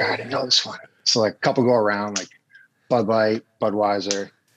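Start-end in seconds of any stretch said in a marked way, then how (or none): 0.0-0.8 nervous, whispered aside. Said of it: "He's like".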